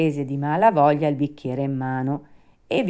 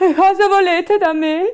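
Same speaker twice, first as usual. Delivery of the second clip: very high, shrill, terrified, frightened shout; 6 dB louder than usual. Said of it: "gridò Pinocchio, rizzandosi tutto impaurito".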